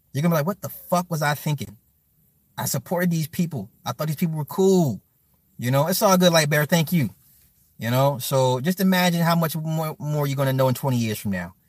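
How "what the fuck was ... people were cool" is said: plain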